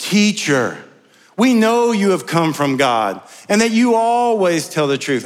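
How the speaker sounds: oozing, syrupy, insincere, sarcastic sweetness. Retelling the enemies' question to Jesus: imitating sarcastic false praise. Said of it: "they were dripping with sarcasm".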